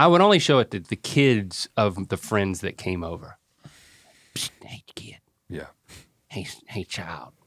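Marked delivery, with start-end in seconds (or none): 4.3-7.3 fake creepy tone, lower and quieter. Pretending to lure a friend's kid to see something: put-on creepy voice. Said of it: "that's not creepy".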